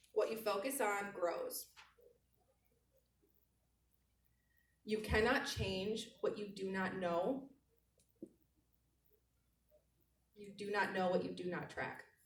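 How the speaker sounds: spelled out at slow, deliberate pace. A speaker tells the audience to write this down: said slowly for dictation. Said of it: "so I'll say it slow".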